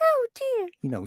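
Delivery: put-on small, high, girlish little girl voice. Showing how a character voice was pitched up: high little girl voice. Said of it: "to get more of a little girl kind of voice, I needed to go up a bit more".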